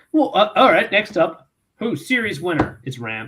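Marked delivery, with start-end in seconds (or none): 2.0-3.3 dismissive, offhand, throwaway, couldn't-care-less delivery. Announcing the series winner to the others: dismissive. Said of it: "you said that so dismissively".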